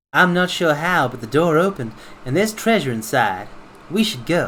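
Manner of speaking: put-on character voice with just a light Southern accent. Voicing game dialogue for Aika, who found treasure: Aika voice. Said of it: "my Aika voice has become less southern".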